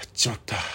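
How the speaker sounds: re-enacted hushed voice. Recounting a childhood story, re-enacting the first whispered words. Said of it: "最初ひそひそ声で".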